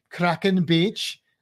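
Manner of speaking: put-on Welsh accent, Welsh-accented pronunciation. Saying the name kraken beach as it should be said, welsh accent. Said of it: "you got to say it with a Welsh accent".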